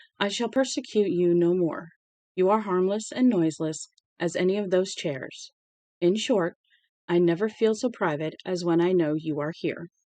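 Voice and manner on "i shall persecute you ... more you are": usual speaking voice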